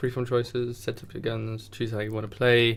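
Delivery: bored, listing tone. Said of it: "You sound so bored".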